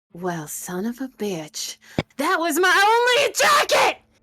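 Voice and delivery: furious, enraged barbarian-like outburst. Voicing a barbarian whose jacket was just slashed: furious barbarian outburst. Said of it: "she's going to rage".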